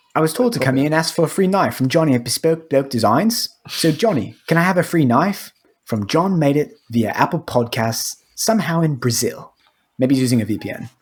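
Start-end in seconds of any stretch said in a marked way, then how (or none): 0.2-5.6 put-on British accent, faster. Podcast host reading a listener's message aloud in a british accent. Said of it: "I'm gonna read it in a British accent".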